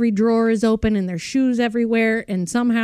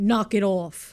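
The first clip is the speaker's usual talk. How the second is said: put-on Brooklyn-style or Jersey accent; 2 semitones lower, 3 dB quieter than usual. Quoting the phrase said most often to the kids: imitating own jersey or brooklyn accent. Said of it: "like you're Jer-, from Jersey or Brooklyn".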